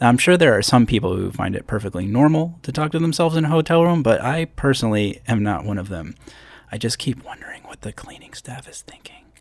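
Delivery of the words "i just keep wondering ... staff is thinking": whispered, much quieter. Alone in a hotel room as cleaning staff walk by, whispering. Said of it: "That's why I'm whispering".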